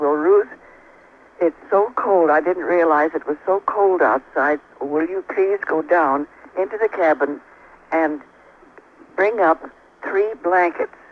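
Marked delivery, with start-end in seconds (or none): none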